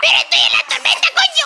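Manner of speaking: high, fast panicked yell.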